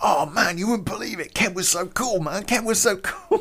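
mock very high, buzzing, psyched gush. Retelling how Greg raved after the job: imitating Greg, excited. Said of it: "He is just so psyched. He's like".

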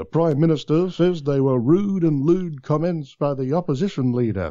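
on-air radio announcer-style bulletin delivery. Imitating an old newsreader his dad used to impersonate: Jim Whaley impression. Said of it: "Jim Whaley'd be sort of like".

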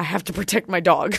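ordinary delivery

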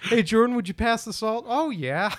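very high voice, slightly Irish, borderline Irish Canadian. Showing off impressions, the speaker does a slightly-too-irish impression. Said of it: "I always go a little too Irish".

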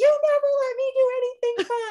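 very high-pitched, shrill yelling. Recounting a late-night argument over cake, the speaker is imitating her yelling. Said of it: "she's like yelling at me".

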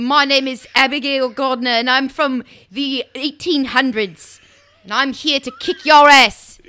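boldly blended English and Australian vowel sounds. Improvising a steampunk challenger from the 1800s: Abigail Gardner in a put-on accent. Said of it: "I don't know if I'm from Australia or England".

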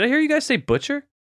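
high, fast, menacing superhero voice. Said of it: "and he goes".

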